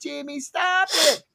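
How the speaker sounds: yelling in a little sister voice.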